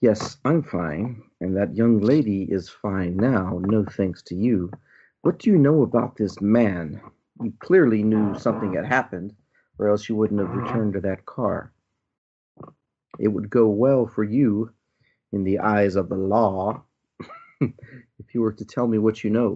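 menacing, intimidating, pressing delivery. As Miss Boone, questioning the conductor, intimidating. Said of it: "I can try to intimidate him again".

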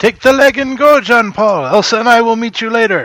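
high-pitched shouted yell. A player's character calls out to a companion as police cries approach, yelling. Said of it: "I'll yell out".

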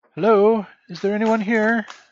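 put-on very high young woman's voice. Voicing someone calling out while the players hide, in a young woman's voice. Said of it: "It's the voice of a young woman".

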